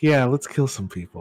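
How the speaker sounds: mild, offhand, casual, matter-of-fact everyday tone. Imitating another player's line: soft and matter-of-fact. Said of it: "soft and matter of fact was like".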